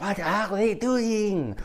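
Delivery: put-on words drawn out in a French accent. Retelling what the organist said over the phone: Peter Lorre voice with French accent. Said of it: "Peter Lorre with a French accent".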